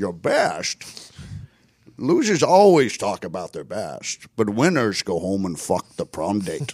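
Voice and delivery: slow cool-guy drawl with big swooping pitch. Quoting a favorite movie line: Sean Connery impression. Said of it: "And then Sean Connery is like".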